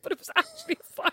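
soft voice laughing through the words. Recounting a mishap to another speaker, apologizing for laughing: laughing while talking. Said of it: "I'm sorry, I'm laughing".

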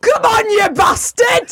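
very high, broadest Yorkshire yell. Retelling what a man shouted at her during sex, broad Yorkshire accent shout. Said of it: "shouted in the broadest Yorkshire accent".

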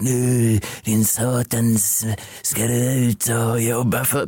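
very slow, scolding Scanian dialect. Retelling what she said to him after he'd been lazing: Skåne accent. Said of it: "Nu på skånska också låter det värre".

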